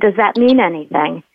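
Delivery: ordinary talk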